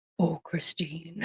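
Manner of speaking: comic, soothing, reassuring fatherly voice. Retelling how a cast member imitates her dad, funny dad voice. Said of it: "has that funny voice for her dad".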